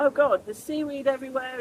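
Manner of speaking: plain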